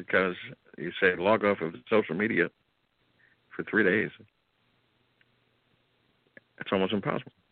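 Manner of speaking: voice catching with emotion. The speaker talks about logging off social media for three days, choking up. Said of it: "I'm choking up here".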